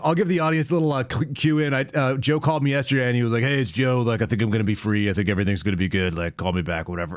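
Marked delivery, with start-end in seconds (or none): 3.4-7.2 laid-back, offhand, low-key casual voice. Retelling a voice message from a caller: imitating Joe's low-key voice message. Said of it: "really, like, low key voice message".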